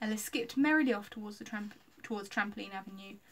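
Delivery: ordinary delivery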